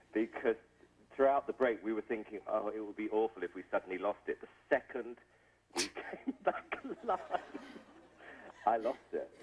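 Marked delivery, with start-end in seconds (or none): none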